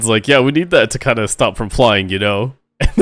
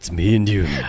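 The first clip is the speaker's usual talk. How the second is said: pretend sinister voice, lower and quieter; 5 semitones lower, 4 dB quieter than usual. Repeating the line after being told it sounded ominous: mock predatory tone. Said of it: "That sounded predatory".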